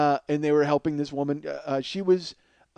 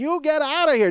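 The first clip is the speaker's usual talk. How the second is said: very high-pitched cartoonish yelling; 12 semitones higher, 4 dB louder than usual. Retelling how the wardrobe lady threw someone out, imitating a cartoonish shout. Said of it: "literally like in a cartoon, she's like".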